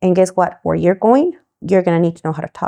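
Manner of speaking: ordinary talk, nothing marked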